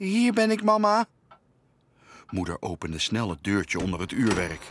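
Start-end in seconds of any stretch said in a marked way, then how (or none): 0.0-1.1 tiny, very high, frightened and anxious voice. The youngest kid, hidden in the clock, answers its mother: anxious little voice. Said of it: "klonk een benauwd stemmetje".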